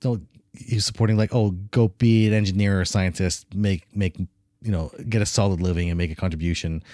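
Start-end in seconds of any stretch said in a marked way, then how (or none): none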